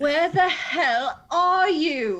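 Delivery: put-on angry English accent. Reading aloud Abigail's reply text, say it in Abigail's reply in English accent. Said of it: "in an English accent".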